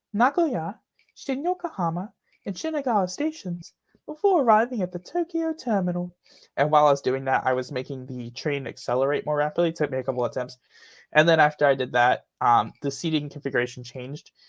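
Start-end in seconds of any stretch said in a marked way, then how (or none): 0.1-6.1 put-on very high-pitched British announcer accent. Retelling a dream of quoting train announcements aloud: british accent. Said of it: "I started quoting that with a British accent".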